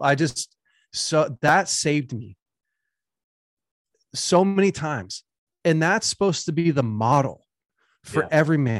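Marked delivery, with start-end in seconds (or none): 0.0-5.2 slow, emotional, choked-up voice. Thanking a mentor for past courage, getting emotional. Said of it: "sorry, I was just getting emotional".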